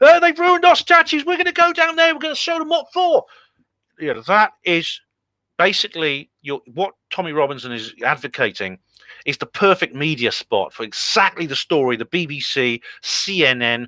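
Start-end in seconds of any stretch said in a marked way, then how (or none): 0.0-3.2 very high-pitched, loud screaming rant. Retelling a video of a man screaming at the camera: imitating Tommy Robinson screaming. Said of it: "his video where he's screaming at the camera".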